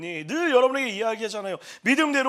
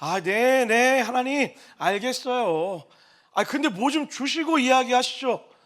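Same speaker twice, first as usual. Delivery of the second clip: slow, drawn-out, mocking sarcastic backtalk. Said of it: "비아냥거리고 있는 거예요".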